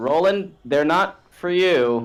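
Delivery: mocking, sarcastic, high-pitched, drawn-out yell. Voicing a character calling out to roland: sarcastic yell. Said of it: "I sarcastically yell".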